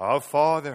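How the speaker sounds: deep, special voice used for praying. A speaker pokes fun at people who change their voice when they pray, prayer voice. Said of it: "someone has a prayer voice".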